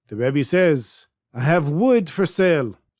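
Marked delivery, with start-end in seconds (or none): 1.4-2.7 put-on real Ukrainian accent. Telling a story, voicing the Rebbe selling wood: real Ukrainian accent. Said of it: "He speaks with a real Ukrainian accent".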